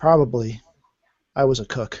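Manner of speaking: quiet, gentle, soft low voice. Retelling Dad's reply to his child's question, soft voice. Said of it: "in a soft voice".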